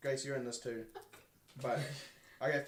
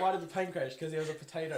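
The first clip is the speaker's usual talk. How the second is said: ordinary delivery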